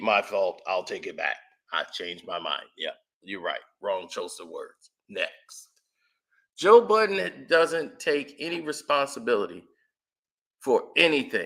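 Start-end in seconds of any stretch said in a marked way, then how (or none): 0.0-4.9 voice dropped way down. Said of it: "and then he be".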